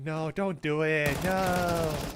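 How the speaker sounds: very slow cartoon voice, each no drawn out. Acting out casters saying a play won't happen: South Park character voice. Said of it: "a good impression of a South Park character".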